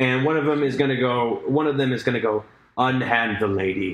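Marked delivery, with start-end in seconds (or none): 2.8-3.9 very hollow voice, as from inside armor. A game master voices an armored figure reaching the players: hollow voice inside armor. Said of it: "in a very, like, hollow voice beneath the".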